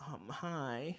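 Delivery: put-on girl voice on the word hi.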